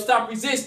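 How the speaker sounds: ordinary delivery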